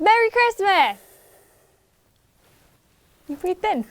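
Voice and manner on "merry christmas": pumped-up, hyped-up cheer, very high and loud. Co-host retaking a video intro after being told to hype it up. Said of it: "Hype it up".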